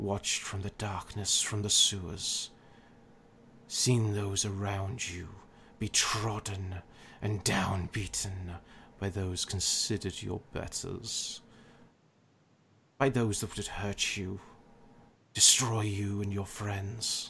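many voices echoing from every direction. A dark power tempts a mortal from the darkness, voice from many mouths. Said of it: "we are merely the [name]. / As he says that, / To be my hand in your world. / You see, as he's speaking, that voice seems to appear just everywhere, and it's almost like different mouths are saying it".

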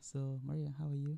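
soft, gentle talking-therapy counsellor voice. Asking Maria how she is, in a put-on therapy voice. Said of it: "Is that the voice you use when you're talking therapy?".

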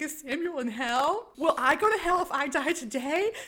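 put-on, very slow, high, drawn-out, worked-up scream. Retelling a film scene where the son panics: imitating Caleb freaking out. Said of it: "Caleb starts freaking out".

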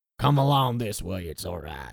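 put-on deep south accent. Pitching a voice like Kurt Russell after a bottle of whiskey: deep south accent. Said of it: "he has like a deep south kind of accent".

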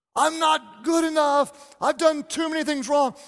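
high, play-acted, tearful, breaking-down sobbing cry. Retelling a man's breakdown to the listener, imitating loud crying. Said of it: "the louder he cried".

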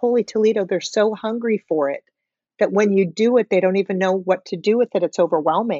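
ordinary delivery

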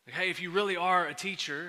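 normal talking voice

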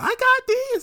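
comic tone, very high pitch, very loud. Retelling a cartoon character's line in George Lopez style. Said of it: "he said in the George Lopez style".

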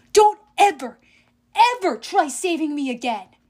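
loud, full-throated shrieking scream. A girl screams at the one who just tried to save her; screaming. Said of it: "Clarice screamed".

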